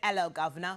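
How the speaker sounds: put-on British accent. Greeting a guest from Britain with a put-on British accent. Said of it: "my British accent".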